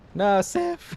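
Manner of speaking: voice breaking very high, cracked yelp. Watching a summoned ally in a fight, crying out: voice cracking. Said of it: "my voice cracked horribly there".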